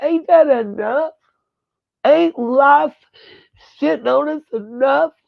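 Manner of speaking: high-pitched tearful fury, voice catching. Speaking to y'all, getting emotional with angry tears. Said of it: "Sorry, y'all, I'm to get emotional".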